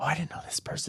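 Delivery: hushed, soft, breathy whisper. Retelling a moviegoer whispering to her husband: imitating someone whispering. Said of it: "she starts whispering to her husband".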